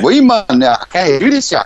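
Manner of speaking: Newcastle Geordie accent. Speaker showing what someone from Geordie country would say: Geordie accent. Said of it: "if you were Geordie".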